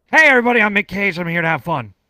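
very loud, high character voice, belted out. Recalling a game character he created, the speaker does his Mick Cage voice. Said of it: "And he talked like this".

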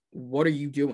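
normal talking voice

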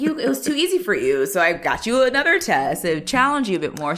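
mock-generous, sarcastic tone in a teacher voice. Retelling what a teacher told students with perfect scores: imitating sarcastic teacher. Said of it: "I love that teacher sarcasm".

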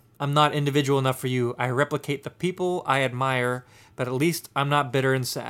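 normal talking voice

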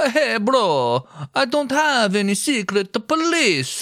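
mock Italian accent, high, slow.

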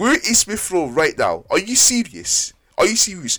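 irked, worked-up, vexed high-pitched ranting. Complaining that a player was left out of the squad: vexed. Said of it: "I'm actually so vexed".

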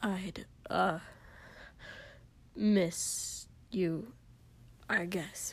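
slow, surly, gruff, low whisper. Narrating Kotsky answering Shoto, in a gruff, low and surly voice. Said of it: "His voice was gruff and low and surly".

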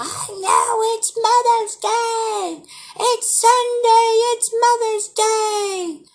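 very high, shrill screaming, "day" drawn out. Retelling what the husband's mother screamed this morning: imitating someone screaming. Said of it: "she was literally screaming at me earlier".

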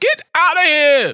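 mock, very high, shrill, furious full-lunged scream. Retelling a lady in Queens screaming at someone, retelling a lady's scream. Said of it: "screaming at the top of her lungs".

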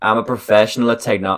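bad put-on American accent. Quoting a post, trying an accent: bad Trump accent. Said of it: "I can't do an accent".

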